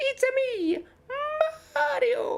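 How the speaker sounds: character voice pushed up very high in pitch. Trying the Mario impression again, voice cracking: Mario impression. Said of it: "I can't do it now".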